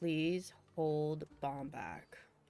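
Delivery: hushed whisper. Voicing a character who leans over to a companion, whispering. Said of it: "leans over and whispers in Jib ear".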